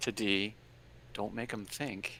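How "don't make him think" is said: quiet whisper, getting quieter. Whispering advice to another player before they speak: whispering. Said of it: "I'm gonna whisper".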